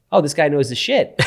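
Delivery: ordinary delivery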